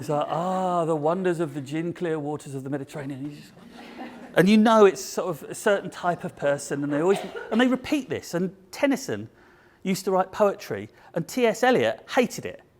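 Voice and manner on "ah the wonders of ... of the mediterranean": luxury-travel tone of voice, quieter. Describing the tone of voice used in luxury travel, demonstrating it: sleeping-gas luxury travel voice. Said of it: "the kind of tone of voice I'm talking about? ... it's like sleeping gas".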